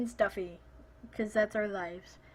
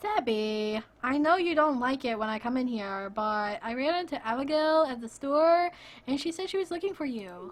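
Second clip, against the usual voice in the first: most annoying, deliberately irritating put-on woman voice. Reading a game character's line aloud: most annoying female voice. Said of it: "the most annoying female voice possible".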